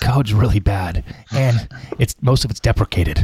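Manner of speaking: hushed whisper. Offering option one for delivering a harsh code review, the speaker whispers. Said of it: "in a whisper".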